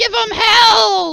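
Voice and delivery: put-on little kid's shrill, very high, very loud scream. Narrator voicing a little kid on the roof rallying fighters, screaming. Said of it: "And it's like".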